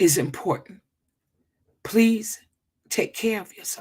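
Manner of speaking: almost in tears, voice close to crying. On a live stream with viewers, almost in tears. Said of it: "I'm almost in tears".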